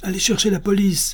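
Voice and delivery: high, cried-out call. Reading a nun calling for the police during a street quarrel, crying out. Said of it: "cria sœur Justine".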